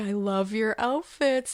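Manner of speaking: plain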